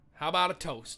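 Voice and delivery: normal talking voice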